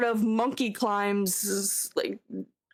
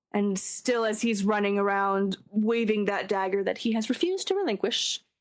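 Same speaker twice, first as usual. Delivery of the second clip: usual speaking voice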